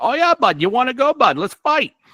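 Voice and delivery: put-on South Boston accent, pitched high. Speaker describes him flipping out and becoming Willie: Willie's South Boston accent. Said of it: "he South Boston, Worcester, whatever that accent is".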